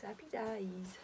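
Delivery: put-on English accent. Saying a phrase the way Jamie Oliver says it: Jamie Oliver English accent. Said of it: "I always have to say that in like a Jamie Oliver voice".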